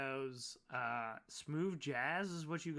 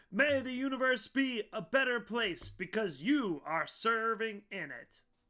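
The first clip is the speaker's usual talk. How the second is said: put-on announcer voice, higher and louder; 7 semitones higher, 7 dB louder than usual. Voicing a message the players hear: Jeff Bezos voice. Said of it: "it's Jeff Bezos' voice going".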